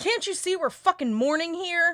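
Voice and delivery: slow, high-pitched yelling. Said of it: "And he yells".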